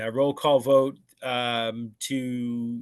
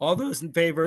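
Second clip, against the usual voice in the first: cracking voice, higher; 5 semitones higher than usual. Calling for a vote to adjourn the meeting, voice cracking. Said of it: "as my voice cracks".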